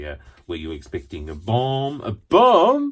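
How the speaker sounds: put-on bumbling French accent. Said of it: "Inspector Clouseau".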